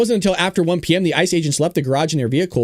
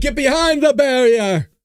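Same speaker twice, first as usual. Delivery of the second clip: put-on New York accent, pitched up; 8 semitones higher than usual. Repeating a line from a clip just played: imitating a new york accent. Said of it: "That New York accent".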